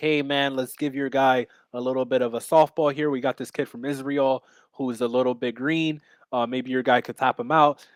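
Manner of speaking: ordinary delivery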